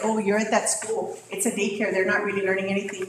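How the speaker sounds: normal talking voice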